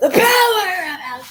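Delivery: very high, yelled in put-on voice. Recalling a high school math teacher's habit in class, imitating Mister Faldy yelling. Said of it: "He would like yell it".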